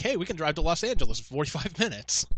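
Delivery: ordinary talk, nothing marked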